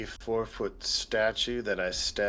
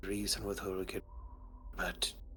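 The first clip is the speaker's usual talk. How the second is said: soft, hushed, conspiratorial murmur. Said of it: "he'll talk in a hushed, conspiratorial tone".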